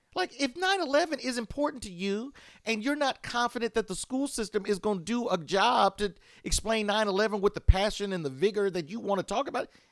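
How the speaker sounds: heated, worked-up voice. Speaker telling listeners they could parent themselves: getting heated. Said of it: "I'm getting heated".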